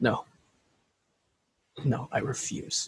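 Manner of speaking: hushed, barely voiced, slow, drawn-out whispered mutter. After the group accepts their partner's death, the narrator performs Buzz; under his breath. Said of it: "hear Buzz under his breath".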